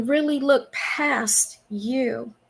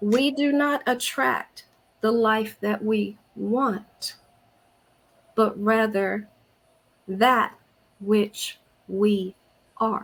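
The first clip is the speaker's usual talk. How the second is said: slow, measured, deliberate word-by-word reading; 2 semitones lower than usual. Reading a devotional quote aloud to the ladies, reading slowly. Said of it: "I'm going to read it slow".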